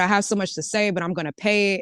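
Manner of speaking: plain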